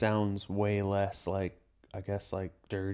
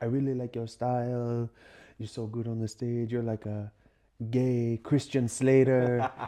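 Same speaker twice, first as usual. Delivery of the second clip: English spoken with put-on French Canadian accent; 2 semitones higher than usual. Retelling what a girl in Toronto said: imitating a French Canadian accent. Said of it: "She had this French accent".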